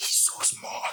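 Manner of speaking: soft, unvoiced whisper.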